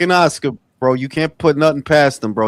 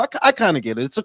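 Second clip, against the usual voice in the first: ordinary delivery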